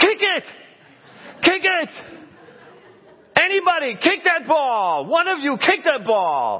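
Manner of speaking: very high, loud, sing-song, swooping holler. Grandpa recalling the kids' game from the side, retelling a yell from the sideline. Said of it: "Grandpa on the side yelling".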